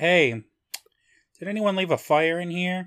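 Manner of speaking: acted casual, unbothered voice. A listener retells how someone's wife noticed an oven fire, imitating a nonchalant tone. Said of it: "Just kind of nonchalantly".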